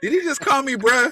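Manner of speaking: high-pitched, incredulous, disbelieving tone. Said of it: "you always give him that side eye".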